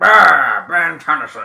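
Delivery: cartoon alien monster creature voice. Joking about wanting to voice a cartoon alien, doing a Ben 10 alien voice. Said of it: "I want to be a voice for Ben Alien".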